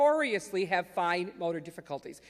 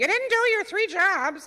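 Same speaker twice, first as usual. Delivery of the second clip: very high, shrill banshee-like shrieking scream; 11 semitones higher, 8 dB louder than usual. Acting out a parent yelling at a kid: imitating a screaming banshee mother.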